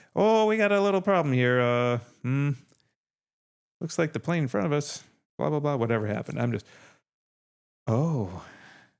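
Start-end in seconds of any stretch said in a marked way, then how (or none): 0.1-6.4 put-on Canadian accent. Stuck on a plane on the tarmac, imitating an announcement in a Canadian accent. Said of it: "the Canadian accent".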